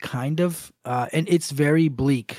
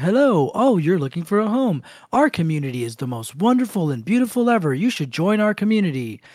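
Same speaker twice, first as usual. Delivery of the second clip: odd, almost machine-like put-on robotic man's voice; 3 semitones higher than usual. Retelling a story, quoting a weird robot-like man: imitating a weird robot-like man. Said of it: "really weird, like, kind of almost, almost, like, robot dude".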